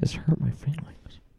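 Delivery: eerie, creepy, breathy whispered voice. Doing a voice for the others, who call it creepy: creepy quiet voice. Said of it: "It's creepy".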